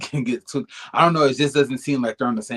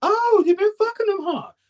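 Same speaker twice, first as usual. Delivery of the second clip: very high, squeaky mimicked voice; 3 dB louder than usual. Retelling reaction to two friends who only like attention: Kendra voice. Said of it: "And my Kendra voice".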